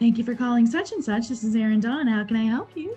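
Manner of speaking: polished, smooth customer service phone-agent voice. Recalling answering calls at an old customer service job, customer service voice. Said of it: "I can still do the customer service voice".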